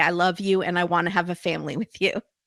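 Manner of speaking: ordinary delivery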